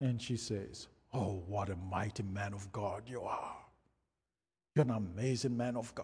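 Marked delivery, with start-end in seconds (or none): 1.1-6.0 strange, unnatural, low, hushed voice. Retelling a prayer when a woman suddenly speaks up; strange voice. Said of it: "this strange voice pops out".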